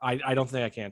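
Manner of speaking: ordinary talk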